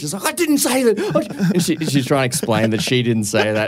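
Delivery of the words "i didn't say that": put-on furious angry voice, higher pitch. Retelling how a mum denied a remark: imitating a furious denial. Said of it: "my mum was furious".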